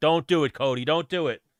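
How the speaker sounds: screaming with an urging tone. Recalling watching a fight on tv, retelling screaming at the tv. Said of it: "I was screaming at the T V like".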